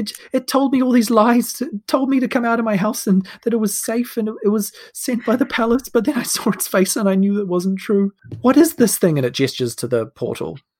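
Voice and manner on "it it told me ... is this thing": high, grateful woman's voice. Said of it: "The woman says".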